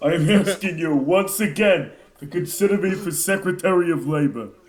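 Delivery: timid, meek, cowering, pleading voice. Repeating a politician's plea: Bernie Sanders impression like Cowardly Lion. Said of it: "my Bernie's becoming a bit more like the Cowardly Lion".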